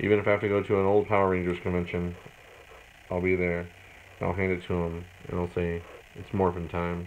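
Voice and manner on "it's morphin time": deadpan, flat monotone with no inflection at all. Speaker acts out what he'll say handing over an item to sign, flat monotone. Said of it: "Just like that, all monotone and everything".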